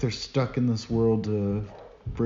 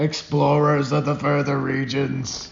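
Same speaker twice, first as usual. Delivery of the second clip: bad put-on, sinister, demonic villain voice; 4 semitones higher than usual. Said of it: "your impression of Thin Ed".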